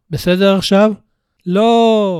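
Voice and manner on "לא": high, tearful voice on the verge of tears. Brian answers John's question with tears in his eyes, tearful shout. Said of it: "צעק בריאן כשדמעות מבצבצות בעיניו".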